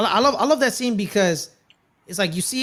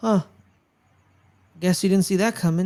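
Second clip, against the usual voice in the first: put-on serious voice. Retelling the character Pietro's last words after being shot: imitating a serious Pietro. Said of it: "very serious".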